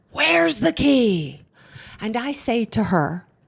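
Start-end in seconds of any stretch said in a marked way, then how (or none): 0.2-1.4 acted-out harsh, demanding shout, high and rough. Retelling how she yelled at the speaker before a meeting, retelling a yell. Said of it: "And she yells at me".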